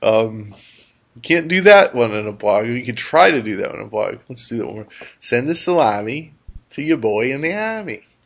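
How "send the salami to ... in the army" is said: New York accent, rolled out. Speaker demonstrating a phrase you can't do in a blog, New York accent. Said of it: "That's New York".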